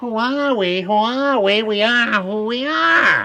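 high, squeaky little voice, drawn way out, very slow. Retelling what a small bearded stranger said in the bakery: squeaky voice. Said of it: "in a squeaky voice said".

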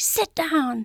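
play-acted, high, screamed voice. Telling how a woman screamed at a dog she was asked to read to. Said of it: "she immediately just screamed at the dog".

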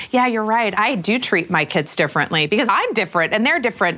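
ordinary delivery

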